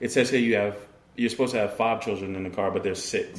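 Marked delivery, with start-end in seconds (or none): none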